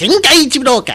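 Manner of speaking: put-on high-pitched voice. Saying a game title, speaker does it in a high-pitched voice. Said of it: "I'll even do it with a high-pitched voice".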